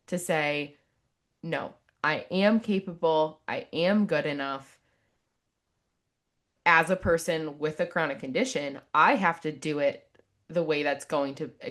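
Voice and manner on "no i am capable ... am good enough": normal talking voice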